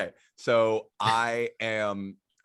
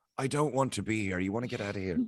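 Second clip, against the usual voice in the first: whispering; 3 dB quieter than usual. Voicing a character who leans over to another character: whispering in someone's ear. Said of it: "kinda whispers in his ear".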